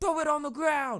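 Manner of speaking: very high, loud shriek. Retelling a security guard yelling at another guy smoking: imitating a security guard screaming. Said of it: "starts screaming at him".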